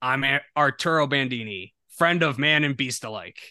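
delivered like a film voiceover. Quoting a film character's repeated voiceover line, trying an Arturo Bandini impression. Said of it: "I want to know if I can do the voice".

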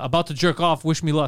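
normal talking voice

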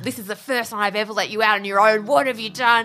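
mock cross, angry, scolding parent voice. Retelling a mum's reaction when her son came home with police: mock-angry parent. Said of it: "in this really like angry parental like".

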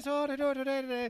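very high-pitched, loud, squeaky, high-strung tense babbling. Imitating a high-strung comedian's way of talking. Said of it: "he talks like this".

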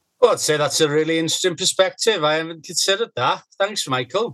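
poor put-on Welsh accent. Responding to a point in a conversation, attempting a Welsh accent. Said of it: "What's that with the voice?".

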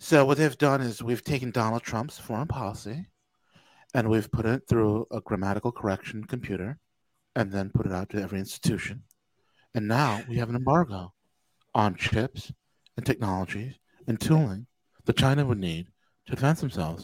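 put-on soft-spoken, effeminate voice. Making fun of how he talks, do a soft-spoken Peter Zeihan impression. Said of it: "So soft-spoken".

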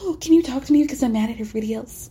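imitated whispering. Mocking a reality star whispering to a friend: imitating someone whispering. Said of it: "whispering, like".

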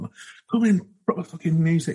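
terrible Scouse accent attempt. Retelling an aggravated man's call to passers-by outside a music night, terrible scouse accent. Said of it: "It's a terrible attempt at a Scouse accent".

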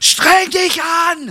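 shrill, very high, barking shout. Retelling how a caster demanded more effort from a young model: imitating someone shouting. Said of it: "schreit er sie an".

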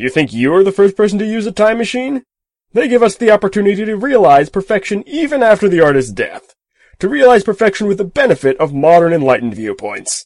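cheerful, very high, swooping, breezy enthusiasm. Anderson talks to a baffled listener; full of easy enthusiasm. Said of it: "he said, / [name]'s voice was full of easy enthusiasm. / said [name] cheerfully".

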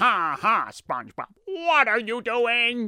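high, swooping cartoon squid character voice. Teacher retells students at school asking him to do Squidward: Squidward impression. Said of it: "do Squidward. So I'm like".

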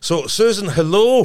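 high, loud bellowing shout.

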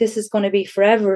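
acted hard, loud sobbing. Retelling sitting on the couch crying hard, retelling sobbing hard. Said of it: "I was just roaring, crying".

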